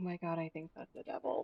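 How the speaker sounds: muttered aside. A player's character mutters aside to his friend, muttering under breath. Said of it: "mutter under his breath to his friend".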